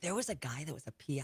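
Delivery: hushed whisper. Reminiscing to a listener about people at the station, whispering. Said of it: "why I'm whispering".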